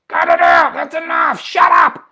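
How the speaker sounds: harsh, aggressive scolding, very loud and high. Showing how it would sound to speak to your dogs, aggressively. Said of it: "very aggressively said to my dogs".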